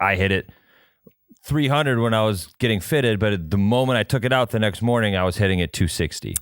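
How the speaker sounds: normal talking voice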